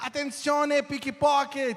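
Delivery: put-on yelled shout, high. Retelling how a woman filming pickpockets warns tourists: imitating someone shouting. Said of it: "e ela filma e começa a gritar assim".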